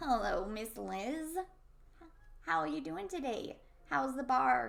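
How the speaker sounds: put-on slow, drawn-out elderly man voice. Role-player greets the bar owner, Miss Liz, in an old man voice. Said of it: "I'm trying to get my old man voice going here".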